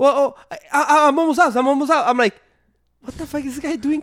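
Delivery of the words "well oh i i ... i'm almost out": play-acted flustered, panicky, stammering, tripping over words. Retelling how a guy answered him, imitating a panicky voice. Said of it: "and he sounded panicky".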